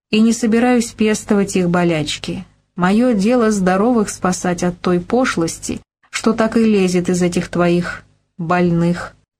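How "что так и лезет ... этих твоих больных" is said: plain reading voice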